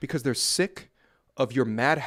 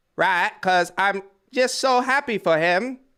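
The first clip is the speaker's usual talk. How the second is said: horrible fake British accent, loud and high; 7 semitones higher, 6 dB louder than usual. A streamer talks to chat in a horrible British accent. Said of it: "That was a horrible British accent".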